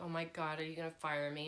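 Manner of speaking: mock begging tone, crying through tears. Retelling fainting at work and asking the boss: imitating own crying plea. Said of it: "crying, going, like".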